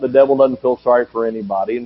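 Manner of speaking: ordinary talk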